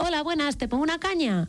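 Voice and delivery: high, polite, proper put-on bartender voice.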